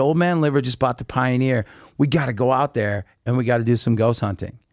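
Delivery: plain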